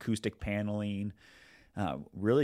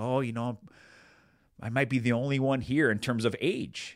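put-on sweet tone of an elderly lady; 3 semitones higher, 4 dB louder than usual. Retelling what an older lady from church said walking in, imitating her sweet voice. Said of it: "in this sweet voice".

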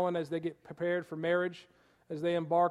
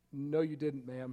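quietly spoken, soft and gentle; 4 semitones lower, 6 dB quieter than usual. Speaker retells answering a woman who claimed she heard them speak; retelling a soft reply. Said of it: "I softly replied".

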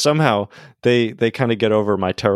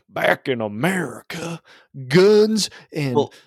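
exaggerated fake Southern American accent, pitched up; 6 semitones higher than usual. Mocking how British people imitate Americans, the speaker does Brits' fake Southern American accent. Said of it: "they always do a Southern accent".

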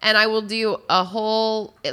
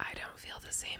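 eerie, hushed whisper, very quiet. Replying to another speaker's remark about the world being normal, whispering. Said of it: "It's creepy when you whisper".

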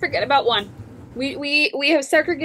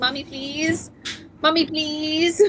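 begging, pleading pet dog voice. Voicing the dog that is begging on the blanket: voicing a begging dog. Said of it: "he's sitting on my blanket, staring at me, going".

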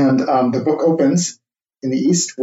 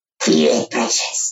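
put-on creature voice, much lower; 9 semitones lower than usual. Joking that a producer should give direction in his Gollum voice: Gollum voice. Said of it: "That was very good. ... I think we found our new Gollum".

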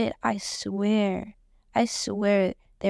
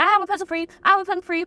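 mock keen, eager, pitched-up delivery; 9 semitones higher, 4 dB louder than usual. Retelling two guys offering a pencil: imitating eager scrambling guys. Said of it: "they were scrambling".

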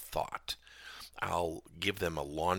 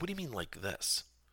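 ordinary talk, nothing marked

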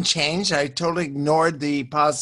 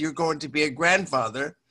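ordinary delivery

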